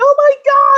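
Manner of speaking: very high, loud, panicked freak-out. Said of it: "people were freaking out going".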